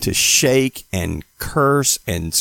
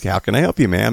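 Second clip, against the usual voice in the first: put-on calm and composed, lower; 3 semitones lower than usual. Retelling a man at a desk greeting a woman, retelling a calm greeting. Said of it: "he's real calm at the desk".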